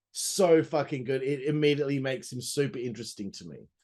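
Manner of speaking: ordinary talk, nothing marked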